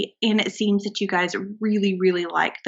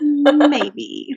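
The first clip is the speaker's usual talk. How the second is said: mocking, plainly sarcastic, raised and high-pitched; 6 semitones higher, 7 dB louder than usual. Talking about their favorite episode, a co-host adds a sarcastic maybe. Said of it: "That was that was a sarcastic maybe".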